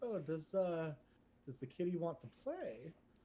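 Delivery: playful, flirty voice. Voicing a Triton guy who leans over: Triton guy flirting. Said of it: "guy leans over and he's like".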